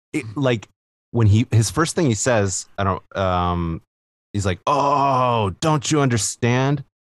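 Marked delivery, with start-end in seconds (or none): 4.6-6.8 bad fake French accent, slow drawn-out oh. Quoting a movie character's first line: imitating Mitch's bad French accent. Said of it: "he's trying to do French, but it's really bad".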